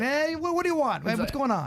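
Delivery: hammed-up Brooklyn accent. Playing a character on a cold call in a Brooklyn Brian put-on Brooklyn accent. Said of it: "I was gonna play a Brooklyn, like Brooklyn Brian".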